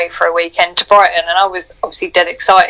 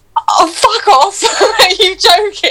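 acted, shocked, high, slow half-sobbing outburst; 13 semitones higher than usual. Retelling own reply to a surprise proposal: retelling half-crying shocked swearing. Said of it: "kind of half crying and hyperventilating and, and, and swearing at him".

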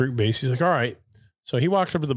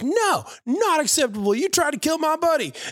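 mock shrill, excitable yelling, pitched way up. Retelling how a friend yelled at a bartender from outside: imitating someone yelling. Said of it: "yells from the outside of the bar".

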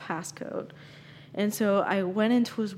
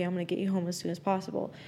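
ordinary delivery

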